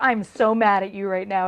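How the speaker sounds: put-on angry sarcasm. Explaining how a phrase sounds when meant as a joke, sarcastic. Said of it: "it's sarcasm".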